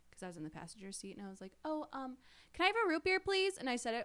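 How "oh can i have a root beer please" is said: put-on very high, childlike, polite little-kid voice. Retelling ordering a drink at a drive-through from the passenger seat, very high voice. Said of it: "My voice was so high".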